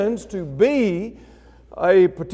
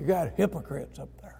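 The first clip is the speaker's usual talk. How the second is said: very quiet, low growling tone; 7 semitones lower, 14 dB quieter than usual. Imitating people who say the church has hypocrites, growling. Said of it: "They kind of change the tone of their voice. They almost growl".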